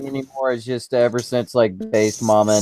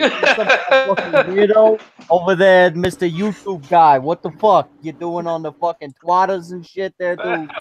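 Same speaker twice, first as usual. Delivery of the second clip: brash put-on New York accent, pitched up; 8 semitones higher than usual. Repeating another speaker's impression: put-on New York accent. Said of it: "In his accent".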